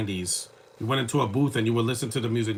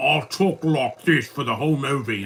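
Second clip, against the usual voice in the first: put-on, slow British accent; 3 semitones higher, 4 dB louder than usual. Discussing a movie cameo by Russell Brand: Russell Brand British accent. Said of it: "you could tell he's British".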